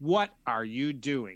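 stern, no-nonsense dad voice. Acting out a parent catching a child in the kitchen: best dad voice. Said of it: "in your best dad voice".

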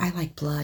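barely audible, very quiet half-whisper. Retelling how a silent girl at a party leaned close: imitating a half-whisper. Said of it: "and whispers".

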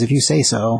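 snide, passive-aggressive tone. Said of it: "passive aggressive on me".

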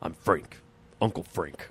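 deep dubbed masculine voice. Describing how Frank is dubbed, the speaker does Uncle Frank's manly voice. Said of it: "it's just so manly".

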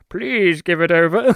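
refined, eloquent, very polite, courtly villain voice. Describing the Mad Max 2 villain asking very nicely for the guzzoline: eloquent voice. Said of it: "He says it in his eloquent voice".

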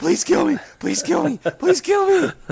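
high, loud, repeated screaming. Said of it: "screaming over and over".

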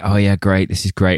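ordinary delivery

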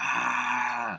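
mild mock yell.

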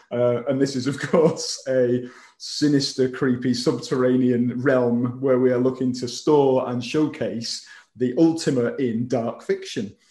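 normal talking voice

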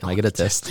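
voiced stage whisper. Acting out a joke reply to a pregnancy announcement: acting out a whisper. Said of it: "I'm gonna hug her and whisper".

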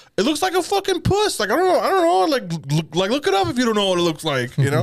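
very high, swooping male voice. Retelling what a guy said when asked, imitating his voice. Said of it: "when you were doing that voice".

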